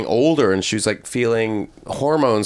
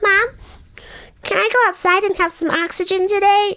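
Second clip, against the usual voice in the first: put-on childish voice, very high. Retelling how the daughter talks in her persona: imitating a childlike persona voice. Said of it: "she talks like that".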